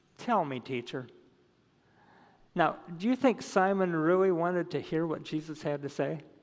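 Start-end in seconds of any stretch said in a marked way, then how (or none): 0.2-1.1 put-on tone, every word dripping with sarcasm. Retelling Simon's reply to Jesus: imitating a sarcastic reply. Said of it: "see the sarcasm drip off of Simon".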